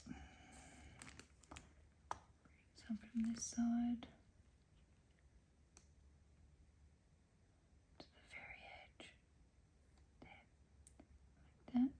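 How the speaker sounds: hushed, very quiet whisper, barely there. Speaker giving step-by-step instructions while working on something, whispering. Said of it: "I don't know why I'm whispering".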